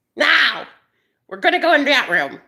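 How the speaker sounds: high, witch-toned shouting. Speaker retells how a woman yelled at them, retelling a yell in witch tone. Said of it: "She yelled at me. In a witch tone".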